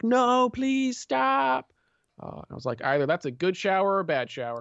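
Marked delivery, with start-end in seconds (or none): 0.0-1.7 very high, loud shrieking scream. Telling a story about hearing someone inside a room: imitating someone screaming. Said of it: "They were just screaming like".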